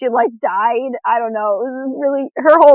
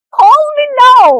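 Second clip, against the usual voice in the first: loud, very high, intense fake Jamaican accent; 13 semitones higher, 7 dB louder than usual. Imitating a TV psychic's ad: Miss Cleo fake Jamaican accent. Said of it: "intense fake Jamaican accent".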